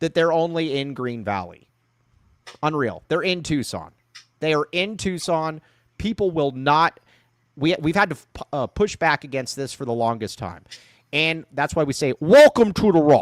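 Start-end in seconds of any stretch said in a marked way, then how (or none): 12.2-13.2 loud, booming, terrible put-on Scottish accent. Pitching a slogan, then asking the other speaker to judge it: Sean Connery impression. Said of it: "What do you think of that Sean Connery impression?".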